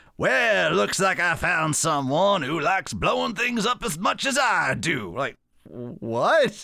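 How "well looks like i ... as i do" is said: southern drawl in a cartoon rooster voice. Retelling what a character says as he walks out, in a Foghorn Leghorn voice. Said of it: "Trying to talk like Foghorn Lakehorn".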